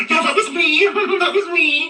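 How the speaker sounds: very high-pitched, gleeful gloating. Imitating a rival bragging about the anniversary: imitating someone gleeful. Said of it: "all happy".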